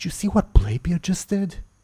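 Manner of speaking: high-pitched stage whisper. A character asking others about someone's behavior, half-whispering. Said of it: "she'll sort of like whisper".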